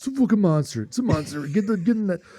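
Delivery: mock overexcited high yelling, barely held back. Telling a fishing podcast how he reacts when a fish comes out: retelling excited shouting. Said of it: "I cannot help myself. I just go".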